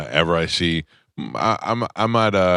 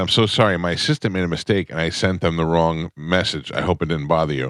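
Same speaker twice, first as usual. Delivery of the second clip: normal talking voice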